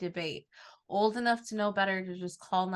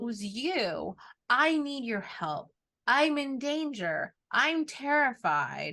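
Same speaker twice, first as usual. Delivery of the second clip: mock yelling; 5 semitones higher, 3 dB louder than usual. Recapping a show scene where she yells at a train, retelling a yell. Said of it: "when she's yelling at A Train".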